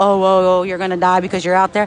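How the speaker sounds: plain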